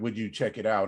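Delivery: ordinary delivery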